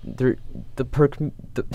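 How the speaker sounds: stammering with excitement. Speaking to the audience, the speaker stumbles over words in excited stuttering. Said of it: "I'm I'm stuttering because I'm so excited".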